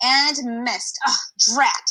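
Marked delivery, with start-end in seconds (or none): 1.1-1.9 hissed exclamation. Reading a story aloud, voicing the cat's line, hissed. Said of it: "she hissed".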